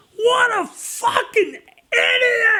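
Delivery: acted very high, enraged scream, idiot drawn out. Recalling listening in real time while driving, retelling a furious scream. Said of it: "I'm just screaming".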